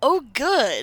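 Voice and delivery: laughing while speaking. Answering an insulting voice from a sword in character, laughing while speaking. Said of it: "I'm gonna laugh and go".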